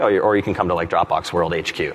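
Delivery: said in a joking tone. Speaker retells inviting a guest over, retelling a joking offer. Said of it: "or sort of jokingly".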